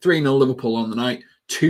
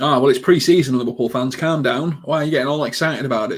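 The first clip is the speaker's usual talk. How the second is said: ordinary talk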